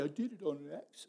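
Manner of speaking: put-on hushed, very quiet, pouty little-boy voice. Retelling how a little boy excused himself when caught: imitating Buzzy's pouty voice. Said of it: "he would always say it with a little pouty face".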